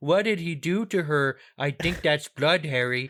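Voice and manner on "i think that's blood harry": put-on nasal, blocked-nose voice. Speaker mocking how an audiobook character with a broken nose talks; broken-nose voice. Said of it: "make him talk like this the whole time".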